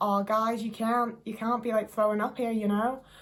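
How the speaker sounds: bad, rough put-on New Zealand accent. Imitating two cops telling people off: attempted new zealand accent. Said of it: "I can't do a New Zealand accent very well".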